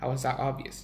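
ordinary delivery

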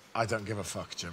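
mock-proud tone. Repeating an earlier answer when asked, retelling a proud reply. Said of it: "what I said proudly was".

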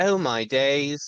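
put-on British accent, woman's voice. Quoting what a British woman always says, in British accent. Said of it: "British. And she goes, "Oh my days," like that".

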